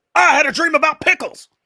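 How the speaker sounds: very high-pitched, very loud, put-on comic character voice. Repeating the impression line when asked to go ahead: Alex Jones impression. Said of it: "that's pretty good".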